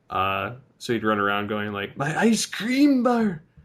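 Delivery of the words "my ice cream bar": shrill, loud, drawn-out cartoon voice. Retelling how an uncle ran around doing a Ren voice. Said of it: "the voice of Ren".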